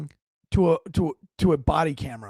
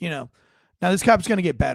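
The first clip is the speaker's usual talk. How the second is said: plain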